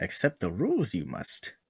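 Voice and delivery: swooping, wide-swinging pitch in a wise-master style. Messaging new members about rules as asked: Yoda voice. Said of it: "You gotta say it like Yoda".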